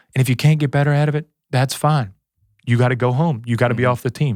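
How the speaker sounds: put-on very calm, even voice. Retelling a meeting where he tells players to improve: imitating someone speaking very calmly. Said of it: "And very calmly".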